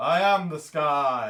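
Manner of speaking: very loud, huge, thunderous booming shout. Voicing the sky in a shared story, in a huge booming thunderclap voice. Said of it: "huge booming, almost like a thunderclap voice".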